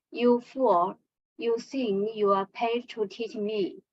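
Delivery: plain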